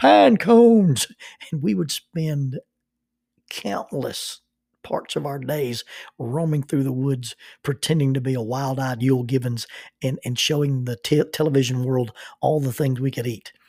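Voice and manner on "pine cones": shrill, high, loud, booming mountain man holler. Quoting a man answering from behind a tree, in his mountain man voice. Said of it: "in his best mountain man voice would say".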